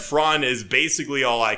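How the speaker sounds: ordinary delivery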